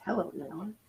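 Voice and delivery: sultry, seductive, come-hither sexy voice. Repeating the other speaker's greeting to Nanya: imitating a sexy voice. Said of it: "That was our sexy voice".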